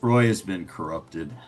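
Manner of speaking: very deep voice with bass underneath. A voice heard from the shadows announcing news, in a very deep bassy voice. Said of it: "deep is a very deep voice with a little bit of bass to it".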